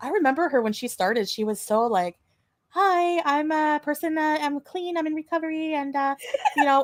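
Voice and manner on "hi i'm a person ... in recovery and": sweet, high, innocent little voice. Retelling how a streamer first presented herself: imitating a sweet innocent voice. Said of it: "her little sweet, innocent voice".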